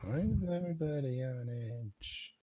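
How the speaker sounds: very quiet, hushed murmur. Asking a tablemate in character at a tense meal: very quiet question. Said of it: "very quietly".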